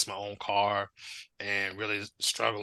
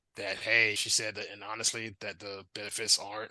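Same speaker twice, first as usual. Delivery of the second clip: plain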